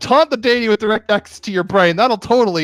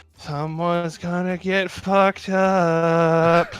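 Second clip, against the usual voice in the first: half-groggy voice, quieter and slower; 5 dB quieter than usual. Describing what the listener hears in the back of their mind, voicing Alice's half-groggy voice. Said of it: "the half groggy voice of Alice going".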